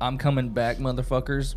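ordinary talk

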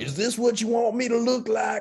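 Arkansas-Oklahoma accent, pitched very high. Replying in a chat about a mask of just big red lips, Arkansas-Oklahoma accent. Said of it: "What was that accent?".

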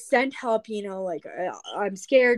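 ordinary talk

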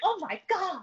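mock yelling. Retelling how a movie character yells at a guy: imitating someone yelling. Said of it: "And she yells at him".

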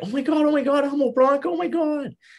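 shrill, very high, starstruck gushing fangirl squeal. Retelling how a woman in a hospital hallway reacted to meeting him: imitating excited fangirling. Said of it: "this woman started fangirling".

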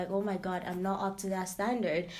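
ordinary talk, nothing marked

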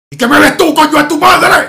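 loud, high, nasty, creepy demonic voice. Retelling how a guy confronted a woman staring at him, in a horrible changed voice. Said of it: "puso la voz así súper de mierda".

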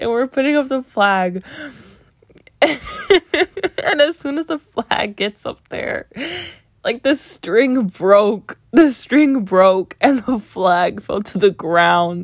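very slow, breaking into laughter through words. Recounting an eighth-grade story to a listener, laughing while talking. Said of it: "I can't stop laughing".

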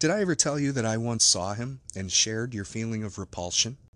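ordinary delivery

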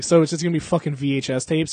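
plain

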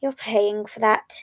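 mumbling under breath. A brother reacts as his sibling smashes a glass on the table, muttered. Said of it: "his brother muttered back".

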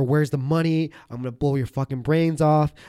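put-on screaming. Retelling armed robbers demanding money: imitating robbers screaming. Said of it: "screaming at us".

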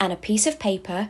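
plain reading voice

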